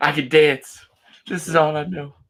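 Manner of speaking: very high, loud sobbing wail. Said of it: "He's, like, crying".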